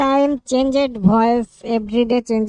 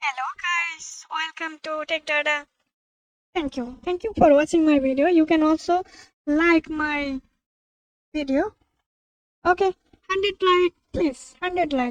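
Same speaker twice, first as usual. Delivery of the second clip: female voice, higher and quieter; 5 semitones higher, 4 dB quieter than usual. Showing a voice changer in real time: voice changed to female. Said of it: "Now I change male to female".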